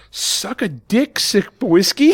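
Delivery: put-on loud yelling in a British accent. A father retells his daughter, in character in a game, yelling at another player: retold yell in British accent. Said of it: "in with her British accent".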